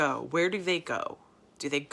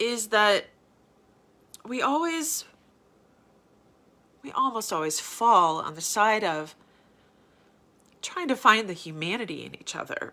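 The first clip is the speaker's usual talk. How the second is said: tearful voice, crying while speaking; 4 semitones higher than usual. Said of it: "I don't know why I'm crying".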